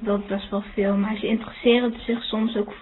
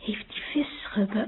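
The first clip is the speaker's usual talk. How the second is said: soft, hushed, under-the-breath whisper; 6 dB quieter than usual. Retelling a question they whispered at dinner, retelling a whisper. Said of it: "Ik vroeg zo fluisterend van".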